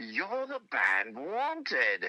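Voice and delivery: put-on British accent with lilting, swooping pitch. Retelling a man stepping out of the hotel elevator recognizing the band, Paul Jupe's British accent. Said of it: "with a great British accent".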